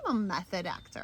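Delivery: ordinary talk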